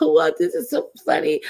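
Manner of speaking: very high, out-of-breath fake laughter. Retelling someone overheard laughing at a stream: imitating fake laughing. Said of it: "This fake laughing, like she couldn't catch her breath".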